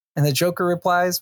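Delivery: normal talking voice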